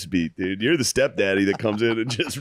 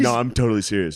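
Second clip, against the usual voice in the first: ordinary talk, nothing marked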